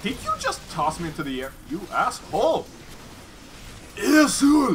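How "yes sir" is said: bad put-on Japanese accent, raised pitch. During an acted scene, the performer replies with a very bad Japanese accent. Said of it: "That is like a very bad Japanese accent".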